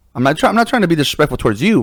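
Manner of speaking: normal talking voice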